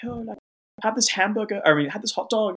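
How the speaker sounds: put-on Swedish accent. Recounting a scene as an audience member, imitating their Swedish accents. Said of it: "talking in their, like, Swedish accents".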